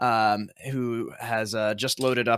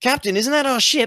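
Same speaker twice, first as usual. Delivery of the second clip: very high, loud shout; 7 dB louder than usual. Voicing someone in a crowd calling out to the captain: shout from the crowd. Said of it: "you hear a shout of".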